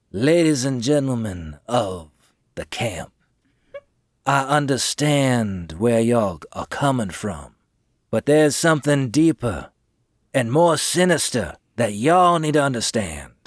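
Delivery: most convincing, persuasive orator's voice. Addressing the crowd at the camp from a table: most convincing voice. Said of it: "I'll use my most convincing voice".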